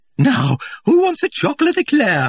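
very high, bright, loud and sing-song, cheerful. Asking a whole group a question, loud and cheerful. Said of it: "she asked in a loud, cheerful tone".

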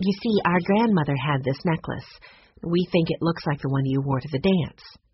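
ordinary delivery, nothing marked

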